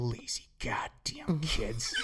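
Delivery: very soft, whispered, hushed mutter under the breath. Retelling what she said as the speaker walked off: imitating muttering under breath. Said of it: "under her breath".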